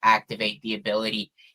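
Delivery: play-acted very low, utterly flat monotone drone. Quoting a character activating a new ability, flat monotone. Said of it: "most monotone".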